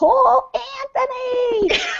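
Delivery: very high, slow, drawn-out yell.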